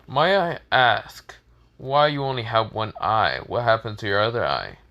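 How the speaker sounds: ordinary delivery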